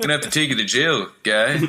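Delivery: put-on Canadian accent. Telling someone they have to go to jail; mock canadian accent. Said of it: "Star Fox, eh?".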